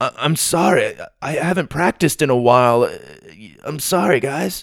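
slow, stammering, flustered voice. Retelling a story, the speaker voices a German kid apologizing to his friends, mock-flustered. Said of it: "poor German kid ... was speechless".

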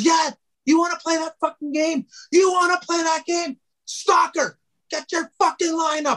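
furious, angry yelling tirade at a very high pitch. Retelling a coach's angry outburst at the bench: imitating someone yelling. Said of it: "And he's all yelling".

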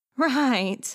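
nervous little giggling laugh. Answering another character's question, with a nervous giggle. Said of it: "Selena giggled nervously".

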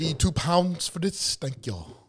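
low, put-on, bad Haitian accent. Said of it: "It was my Haitian accent".

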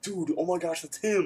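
put-on whisper. Retelling what a photographer friend said on spotting someone: imitating a whisper. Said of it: "whispered to me".

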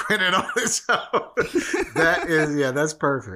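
laughing while talking, high-pitched.

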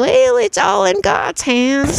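put-on Southern accent, drawn out and slow. Retelling what the Southern competitor said with a cheesy smile: imitating Leslie's Southern accent. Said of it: "And then she's Southern".

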